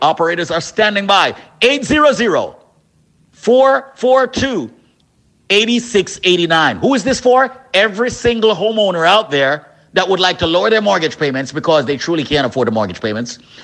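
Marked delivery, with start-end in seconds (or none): 1.6-6.8 slow, careful, deliberate reading. Repeating the call-in number for homeowners, saying it slowly. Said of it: "Let me say the number slowly".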